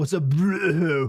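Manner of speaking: loud, drawn-out bro with retching, heaving sound. Practicing different ways of saying bro, puking out the word bro. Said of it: "learn to like puke out the bro".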